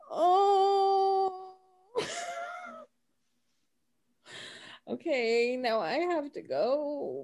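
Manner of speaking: very high, teary, choked-up, swooping emotional voice. Moved to tears during the game, announcing they have to go: emotional, near tears. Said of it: "but I'm emotional".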